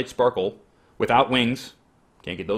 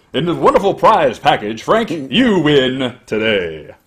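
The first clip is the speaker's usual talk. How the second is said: booming, very loud on-air TV announcer voice; 3 semitones higher, 9 dB louder than usual. Host announcing a prize winner for tv, switching into a tv voice. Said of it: "I should talk in my TV voice".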